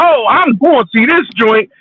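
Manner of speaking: imitated geeked-up voice. Retelling hearing trailers before a film: imitating own past hype. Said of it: "I'm getting all geeked up".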